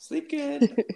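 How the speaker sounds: sweet voice.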